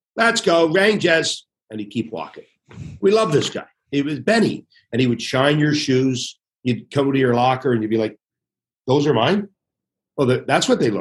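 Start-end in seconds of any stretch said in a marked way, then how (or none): 0.2-1.5 put-on Brooklyn accent, pitched up, called out. Recalling Benny, who picked up towels and stopped mid-room each day, Benny's Brooklyn accent. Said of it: "with his Brooklyn accent".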